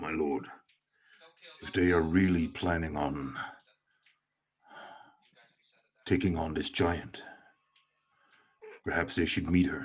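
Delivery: giant voice, loud but hushed whisper. Narrating a giant speaking to its lord, in a giant's loud whisper. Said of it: "he kind of whispers and says".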